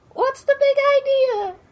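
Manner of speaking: very high, squeaky little spider voice. Narrating a game scene, speaker voices a spider thrown against a wall, spider voice. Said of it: "That's a spider's voice".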